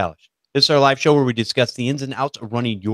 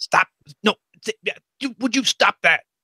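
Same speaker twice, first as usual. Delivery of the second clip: acted-out yelling, pitched higher; 9 semitones higher than usual. Acting out telling kids to stop: imitating yelling at kids. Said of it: "Kinda like yelling at your kids".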